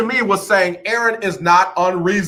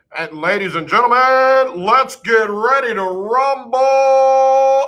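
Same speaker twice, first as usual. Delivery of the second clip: slow, high ring-announcer call, long held rumble; 5 semitones higher than usual. Offering to read a player's breaking news aloud: Michael Buffer voice. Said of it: "I'll read it in my Michael Buffer".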